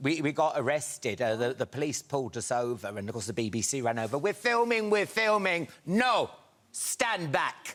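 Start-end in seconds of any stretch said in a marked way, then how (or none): 4.2-7.8 high-pitched put-on Italian accent. Retelling being pulled over by police while filming, italian accent. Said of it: "that your Italian accent?".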